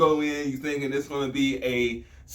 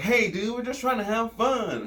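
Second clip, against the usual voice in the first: put-on higher-pitched, innocent, harmless little-boy voice; 8 semitones higher than usual. Retelling how Peter Pan lures kids: Peter Pan's innocent kid voice. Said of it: "he tries to sound like, you know, an innocent boy".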